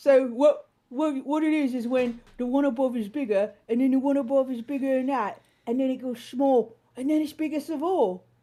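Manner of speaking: clumsy, bad put-on British accent. Explaining a scene from a British episode, in a bad British accent. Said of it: "so I'm going to do a bad accent".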